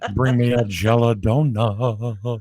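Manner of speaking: mocking talk out of side of mouth. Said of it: "Talk out of the side of my mouth".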